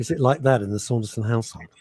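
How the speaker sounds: ordinary delivery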